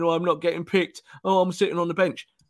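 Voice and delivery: high fake sobbing, blubbering, crying hard. Imitating a player crying his eyes out: mock crying. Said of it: "a player crying his eyes out, going".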